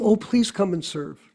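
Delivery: normal talking voice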